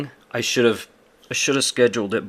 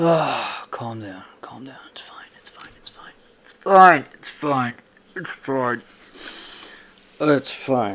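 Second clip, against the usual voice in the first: agitated, repeated, self-reassuring tone; 6 dB quieter than usual. Upset that his plans fell through, calming himself down. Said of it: "I need to calm down".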